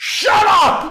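very high, very loud, shrill full-volume scream. Acting out what a character shouts in the show, retelling a scream. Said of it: "I just screamed shut up at the top of my lungs".

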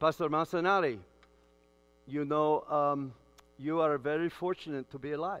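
put-on Sri Lankan English accent, best attempt. Quoting a Sri Lankan man the morning after surgery: imitated Sri Lankan accent. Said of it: "he's Sri Lankan, and he said in the best voice I can do".

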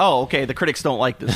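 ordinary delivery

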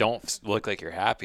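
ordinary delivery

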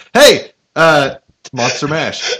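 loud, drawn-out yelling.

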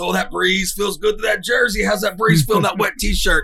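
bragging, proud, high-pitched shout.

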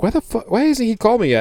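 put-on very high, fed-up, frustrated rant. Retelling waiting hours for a call, acting out being pissed off. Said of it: "I was getting pissed".

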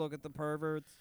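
normal talking voice

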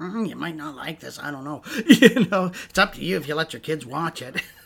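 acted cartoon-mother voice. Describing a Simpsons episode where Marge warns the audience: Marge Simpson impression. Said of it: "Your Marge impression is actually fairly good".

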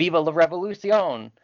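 fervent, zealous yell. Describing a character's French voice acting, imitating a zealous French revolutionary yelling. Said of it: "he sounds like this zealous French revolutionary yelling".

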